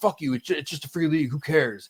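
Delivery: put-on aggressive, combative, hostile, dismissive tone. Retelling a cousin's reply in a fantasy league: imitating Shark, combative. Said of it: "He got combative".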